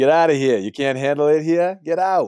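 put-on heavier Boston accent. After a co-host's weak try, the speaker shows how it's done: boston accent. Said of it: "could you say that with a little more Boston accent".

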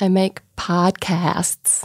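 attempted American accent. An australian podcaster tries saying podcasts in an american accent. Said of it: "trying to say podcasts in an American accent".

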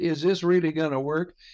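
skeptical, doubtful, full of sarcasm. Retelling a lady's question after her detoxes: imitating a sarcastic question. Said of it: "she sarcastically said".

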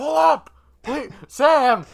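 desperate, pleading yell, very high and very loud. Retelling cheering on a player at a playoff game: imitating own yelling. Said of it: "I'm yelling".

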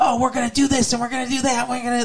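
put-on eager young boy cartoon voice. Imitating the small cartoon dog's eager plans: imitating an eager little cartoon dog. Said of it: "it's like a little brother kind of energy".

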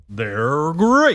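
big, showy put-on cartoon mascot voice. Asked by another speaker to do his theater voice, Tony the Tiger voice. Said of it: "Can you do your theater voice and give me the they're great".

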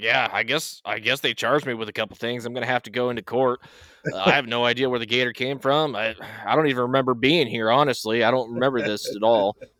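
mock nonchalant man's tone. Retelling a news interview with a man charged over a gator: imitating a nonchalant man. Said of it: "He was so nonchalant about it".

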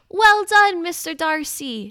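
mock cheeriest call, very high, very slow, drawn out. Calling out to congratulate the actor on his win, in the cheeriest voice. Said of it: "In my cheeriest voice, I called out".

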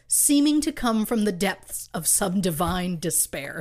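plain

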